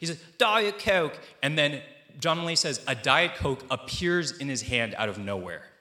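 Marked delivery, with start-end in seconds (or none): 0.4-1.2 put-on British accent, pitched higher than normal. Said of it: "because he's British".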